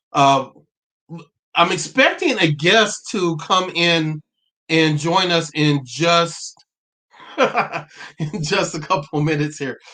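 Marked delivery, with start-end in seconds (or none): 7.3-9.7 laughing through the line, words broken up by laughter. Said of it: "Sorry, I'm laughing though".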